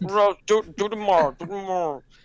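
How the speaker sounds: words smeared into an indistinct mumble. Retelling how a teacher speaks in class: imitating a mumbling teacher. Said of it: "he kinda speaks in a mumble".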